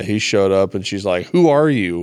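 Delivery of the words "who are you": put-on panicked outburst, higher and louder. Retelling a Bible story, imitating the Witch of Endor freaking out. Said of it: "freaking out on Saul".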